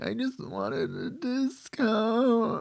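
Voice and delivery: very high, sing-song, drawn-out whining voice. Retelling a woman carried out of a store: imitating someone whining. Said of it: "she just keeps on, like, whining".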